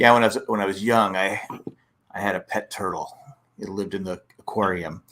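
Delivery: deadpan delivery. Retelling a comedian's bit about a pet turtle: imitating a deadpan comedian. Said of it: "he's deadpan".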